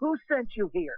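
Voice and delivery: put-on, angry, high-pitched shouted delivery. Retelling a frightened man demanding answers from a girl: imitating a yell. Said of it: "He yelled".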